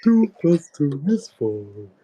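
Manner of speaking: put-on very high-pitched kids' TV dinosaur voice. Asked to use that voice, the speaker gives an example in Barney voice. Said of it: "Please use that voice".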